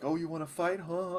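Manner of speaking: fake Cockney British accent. Picturing someone picking a fight, the speaker slips into a Cockney British accent. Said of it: "It always goes to Cockney British".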